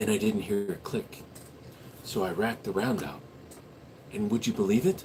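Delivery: soft, hushed ASMR whisper. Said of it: "A S M R for one whole minute".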